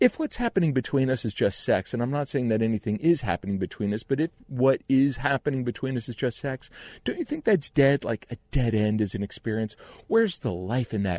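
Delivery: put-on, desperately innocent pleading voice. Retelling what she said when she called one night: imitating her desperately innocent voice. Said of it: "in her desperately innocent voice".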